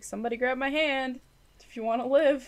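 high yell, called out loud. In a game, the speaker's character yells to those behind: yelling behind. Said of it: "I'm going to yell behind me and be like".

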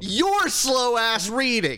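excited ranting voice.

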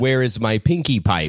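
agitated, upset, pushy, insistent delivery. In a scene at a funeral, confronting someone, loud and agitated. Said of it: "Could you settle down a little bit".

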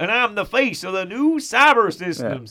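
loud, belted sergeant voice. Imitating a movie character introducing himself: William Candy accent impression. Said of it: "He's like".

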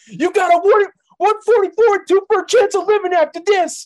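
shrill, very loud yelling. Imitating a wrestler confronting someone with odds: Scott Steiner impression. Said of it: "I'll just do the same thing back".

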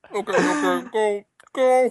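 high, laugh-choked, talking through helpless laughter. Telling the other speaker to start reading, laughing hard while talking. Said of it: "I'm crying so hard right now".

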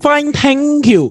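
high, put-on Indian uncle accent, played as a role. Podcast co-host playing the indian uncle answers the host: mock indian accent. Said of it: "you can drop the accent now".

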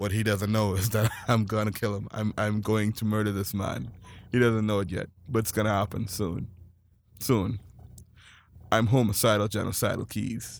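low, flat, unreadable deadpan monotone. Imitating Keys, whose energy never moves: imitating Keys' flat monotone. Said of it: "that was you".

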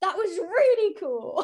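high voice cracking and breaking on words. Recalling an affirming moment of being called an artist: voice breaking. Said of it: "My voice just broke".

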